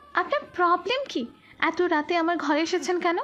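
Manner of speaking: breathless shout. Reading a story aloud, a startled woman demands why he came: breathless shout. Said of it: "হাঁপানো কণ্ঠে চেঁচিয়ে বলে".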